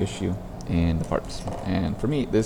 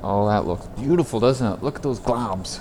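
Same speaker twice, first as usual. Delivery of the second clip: over-admiring, sarcastic underneath; 4 semitones higher than usual. Commenting on poor video encoding quality, sarcastic. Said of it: "That's my Saturday sarcasm".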